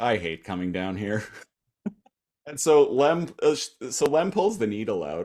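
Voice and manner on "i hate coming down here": put-on defeated tone, faster. Retelling how a woman reacted to getting a needle, imitating her defeated tone. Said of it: "Just in a very defeated way".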